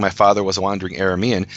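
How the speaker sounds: normal talking voice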